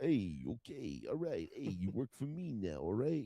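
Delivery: put-on tough mobster voice. Describing Sly's mobster character who keeps fussing with his jacket: Sly mobster impression. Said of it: "he's like".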